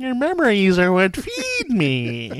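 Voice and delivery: stretched out, high and swooping. Repeat the worst line of the movie as an impression that comes out as a Carol Channing voice. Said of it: "That was more Carol Channing".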